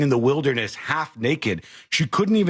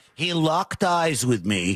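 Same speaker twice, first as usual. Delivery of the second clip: mock child voice speaking lawyerly, higher pitch; 3 semitones higher than usual. Mocking a kid's retelling, imitating a kid speaking like a lawyer. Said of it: "he's speaking like a lawyer".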